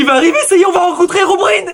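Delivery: very high, thrilled, excited shouting. Announcing that herobrine is about to arrive: yelling excitedly. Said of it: "Arrête de crier".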